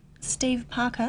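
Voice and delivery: puzzled, questioning rising tune on Parker. Answering a phone caller who gives his name: puzzled questioning rise. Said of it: "listen to the way that [name] says Steve's name".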